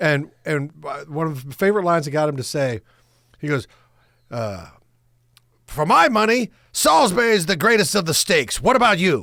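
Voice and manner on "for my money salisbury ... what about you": brash, bold, self-assured put-on voice. Retelling a line written for Larry King: brash Larry King voice. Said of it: "his very brash voice".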